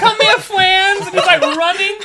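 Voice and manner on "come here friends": put-on childlike killer voice, higher and louder. Retelling a game where a player ran around as Jason: imitating a player's Jason voice. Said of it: "this dude was running around as Jason".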